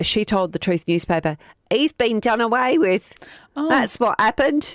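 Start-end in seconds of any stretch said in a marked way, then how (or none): 1.7-3.1 put-on weird, vague Scottish accent, pitched up high. Telling a true-crime story, quoting what a woman told a newspaper, weirdly Scottish accent. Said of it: "you're getting a bit weirdly Scottish".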